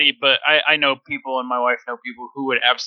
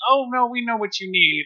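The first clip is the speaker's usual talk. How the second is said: put-on overbearing, presumptuous busybody tone, pitched up; 9 semitones higher than usual. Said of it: "they're both like".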